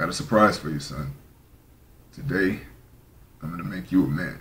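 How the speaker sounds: rugged, low, heavy rumbling grumble. Narrating a story where a father speaks to his son on his birthday, heavy, rugged grumbling voice. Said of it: "heavy, rugged voice grumble and say".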